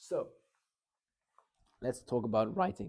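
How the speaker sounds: minor voice crack, voice breaking slightly. Speaking to an audience about structure and writing, voice cracking. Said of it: "Minor voice crack".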